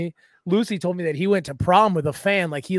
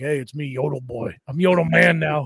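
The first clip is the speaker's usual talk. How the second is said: mock deepened voice, lower; 3 semitones lower than usual. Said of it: "his voice dropped".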